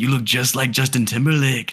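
put-on, fake Spanish accent. Quoting what a Spanish guy told the speaker, in a put-on Spanish accent. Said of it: "forgive me for this accent I'm about to run".

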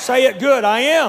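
loud, high-pitched voice, projected.

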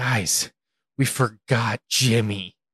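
acted-out frazzled, alarmed, flustered, panicky outburst. Recalling leaving the zoo, the speaker acts out a man imitating flustered panic. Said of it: "he'd just be all flustered".

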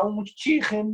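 put-on Liverpool Scouse accent on the word. Mimicking how people talk when they come in, scouse accent. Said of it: "getting a Scouse accent".

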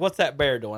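plain

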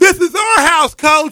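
very high, shrill, very loud shriek. Retelling a movie scene where a kid on the platform screams: imitating a kid screaming. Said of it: "he screams".

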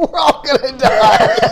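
put-on screaming voice. Retelling a meme where a dad screams at his kid: imitating a dad screaming. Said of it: "the dad turns around and screams".

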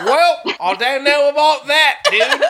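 put-on Australian accent. Saying a famous Hulk Hogan saying in a put-on Australian accent. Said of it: "incorporated a famous Hulk Hogan saying into Australian".

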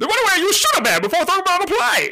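very loud, high voice with swooping pitch. Retelling a movie's opening scene, then the villain's first line: Bane voice. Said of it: "the only thing you hear is this".

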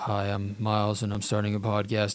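very low, lifeless, flat monotone without inflection. Imitating own past self starting a podcast, very low monotone voice. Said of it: "he was really more like this: ... my voice is very low and I'm monotone".

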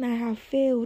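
put-on wailing. Retelling comforting someone who kept repeating one line: imitating someone wailing. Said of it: "She's just wailing and saying".

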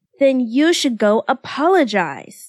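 insistent, firm and demanding pushing tone. Narrator reads the Hitachins shoving Kyoya toward the doors, demanding. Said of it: "demanded the Hitachins".

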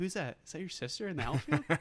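high, teasing jeer. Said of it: "Ham is killing me in that scene".

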